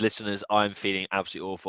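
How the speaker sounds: usual speaking voice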